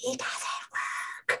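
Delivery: forceful, very hushed, fully whispered yell. Retelling a reaction to a comment about paying: imitating a whispered yell. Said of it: "yelling with my, like, whisper voice".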